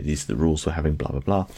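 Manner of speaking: usual speaking voice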